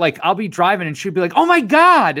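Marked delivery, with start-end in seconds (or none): 1.4-2.2 mock sudden, shrill, very high blurted outburst. Retelling a wife blurting out while he drives: imitating a sudden blurted exclamation. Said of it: "blurt it out, and it freaks me out".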